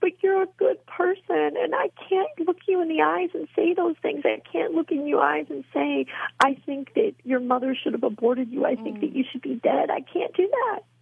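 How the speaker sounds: high-pitched, bawling, tearful sobbing. Retelling what a woman said to the speaker while bawling, imitating someone sobbing. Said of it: "and then she started bawling, sobbing".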